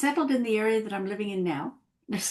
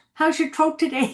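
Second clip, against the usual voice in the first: put-on Irish accent, higher in pitch; 6 semitones higher, 5 dB louder than usual. Talking about their father's pronunciation, the speaker quotes him, imitating dad's Irish accent. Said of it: "my dad could never say throat. He'd always say throat".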